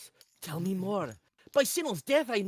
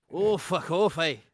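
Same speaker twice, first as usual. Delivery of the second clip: put-on Scottish accent, lower; 3 semitones lower, 5 dB louder than usual. Doing a requested Scottish Macbeth for someone who asked, Scottish Macbeth voice. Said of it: "someone asked for a Scottish Macbeth".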